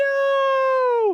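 high wailing cry. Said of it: "breaking out and crying".

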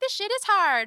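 squeaky, very high, loud cartoonish voice. Voicing what she told herself, in her cartoon imagination voice. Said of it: "that's your imagination voice".

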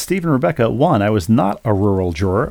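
normal talking voice

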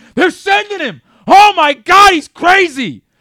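very loud, high-pitched, drawn-out screaming. Retelling seeing a runner fly around third base: retelling own screaming. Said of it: "I just start screaming".

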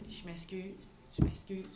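meek, shamefaced, sheepish and pitiful tone. Apologizing in character to the group after causing trouble: sheepish apology. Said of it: "j'arrive piteuse".

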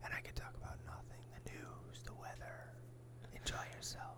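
soothing, gentle ASMR whisper.

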